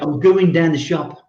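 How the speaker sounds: Birmingham accent. Showing how a local would say the phrase: brummie accent. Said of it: "you would say".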